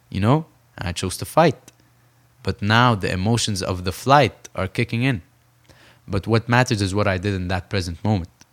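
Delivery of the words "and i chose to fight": usual speaking voice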